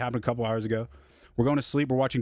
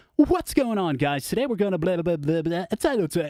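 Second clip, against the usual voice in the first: put-on high, talking-down tone as if to little kids; 7 semitones higher, 3 dB louder than usual. Imitating a guy recapping a gory movie online: imitating talking to preschoolers. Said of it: "he's talking like he's speaking to preschoolers".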